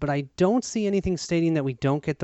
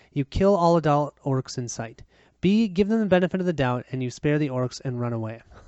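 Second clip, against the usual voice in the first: usual speaking voice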